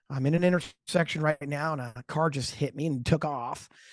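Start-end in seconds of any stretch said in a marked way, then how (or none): none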